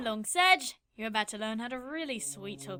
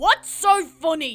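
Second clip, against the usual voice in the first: tense, tight, shrill, very loud shout; 6 semitones higher, 14 dB louder than usual. Answering a giggling girl who is held at knifepoint: tight tone. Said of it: "Kid says in a tight tone".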